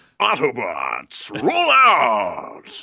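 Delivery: swooping pitch call, last word "out" stretched out. Do the only impression you do, at perhaps the last chance: an Optimus Prime impression. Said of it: "I need to do my Optimus Prime".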